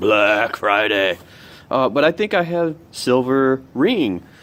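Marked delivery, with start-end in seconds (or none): 0.0-1.2 dark, doom-laden, ominous, foreboding tone. Announcing the day in a video, ominous voice. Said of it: "should say that in an ominous voice".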